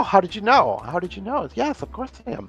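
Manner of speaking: brightened, happy. Narrator voicing a tusked orc who brightens when asked where he's from, delighted. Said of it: "his face kind of brightens up and he smiles".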